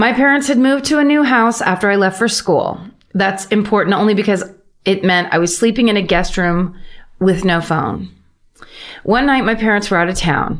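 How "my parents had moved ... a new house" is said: ordinary delivery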